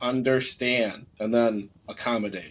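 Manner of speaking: stressed words understand and accommodate. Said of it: "I want to stress that word".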